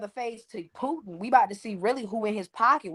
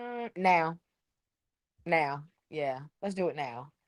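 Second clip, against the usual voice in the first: cool, composed, quiet and soft calm murmur; 5 semitones lower, 6 dB quieter than usual. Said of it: "He was so calm, so quiet with it".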